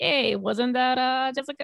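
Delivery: poor put-on Canadian accent. Retelling what a canadian passerby said, in a bad canadian accent. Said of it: "that's not a good Canadian".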